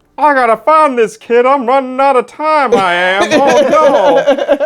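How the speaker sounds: very loud, very high, slow belted voice. Retelling a game character's line, read as a Hank Hill voice. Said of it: "It sounded more Hank Hill".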